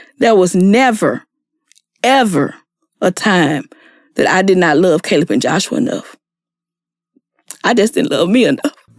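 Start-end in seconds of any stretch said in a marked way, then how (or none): 0.2-6.2 very slow, low, halting, word by word. Answering people who said they must not love their kids, very slow delivery. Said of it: "I'm going to say this very slow".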